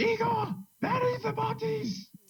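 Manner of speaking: screaming. Answering a shout in character, ordering igor to bury the bodies: screaming back. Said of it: "I'm gonna scream back".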